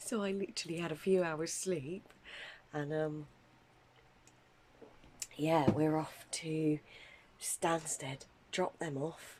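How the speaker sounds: soft, hushed half-whisper. Talking at night while everyone in the house is asleep, half-whispering. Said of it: "I'm whispering because everyone's asleep".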